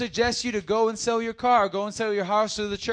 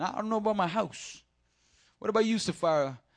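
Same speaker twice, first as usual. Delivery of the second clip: put-on Italian accent, chatty delivery; 4 dB quieter than usual. Retelling Ananias talking it over with Sapphira: Italian accent as Ananias. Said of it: "Now he's Italian".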